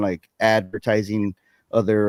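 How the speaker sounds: plain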